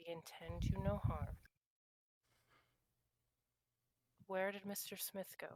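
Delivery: calm, composed tone. A character speaking to a hesitant woman about a man they are hunting, very calm. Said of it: "very calm, speaking to people voice".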